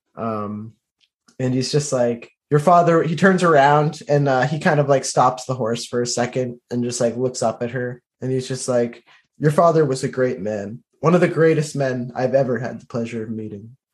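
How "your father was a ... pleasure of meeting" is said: play-acted, grave, earnest, solemn, serious delivery. Retelling how a man stops his horse and looks up at her, acting out a solemn, serious tone. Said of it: "he becomes very kind of like solemn and serious".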